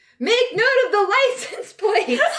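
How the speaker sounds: shrill, very high-pitched shout. Running after someone and calling back to Debbie: yelling. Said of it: "I'm gonna yell back to Debbie".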